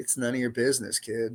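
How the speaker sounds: mock cold, dismissive tone. Retelling a card-playing man's reply to his plea to act, imitating a cold tone. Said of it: "he was just so cold about it".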